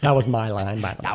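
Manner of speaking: proud, boastful aside. Retelling how Robert Englund brags about his line: Robert Englund impression. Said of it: "He'll tell you every ten seconds".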